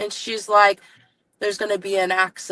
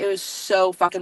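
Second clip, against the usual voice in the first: ordinary delivery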